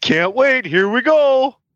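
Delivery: very high, slow, loud mocking voice. Answering a question about the announcement in a Goofy voice. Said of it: "you sounded like Goofy when you did it".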